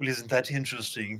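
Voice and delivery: mock posh South London accent. Retelling mimicking a friend's speech back to her: put-on posh south london accent. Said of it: "super posh, like, South London".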